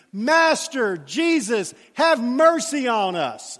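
very slow, booming, very loud, drawn-out yell. Retelling how the lepers called out to jesus from a distance: retelling a very loud yell. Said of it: "in a very loud voice".

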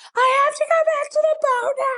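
screaming way up very high. Speaker recalling a snorkeling tour, retelling a scream. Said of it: "So I just started screaming".

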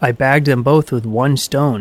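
ordinary delivery

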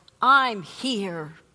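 loud, firm, steady, unwavering tone. Telling a courtroom story, quoting a woman answering the whole room, loud and firm. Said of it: "in a loud, firm voice".

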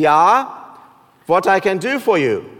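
put-on slow, thick German accent. Telling a joke, voicing the German coast guard answering an SOS, in a thick German accent. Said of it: "in a thick German accent".

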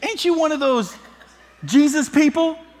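very high Southern schoolgirl voice. Retelling a schoolgirl questioning Peter by the fire pit, in a southern accent. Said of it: "I don't know why I did a southern accent".

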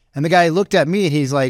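ordinary talk

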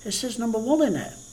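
put-on light Irish accent. Speaker retells what a man said about his book, soft Irish accent. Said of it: "In his little soft Irish accent".

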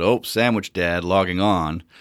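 sarcastic, drawn-out tone. Retelling a comment someone made on a post: imitating a sarcastic remark. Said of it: "someone sort of sarcastically said".

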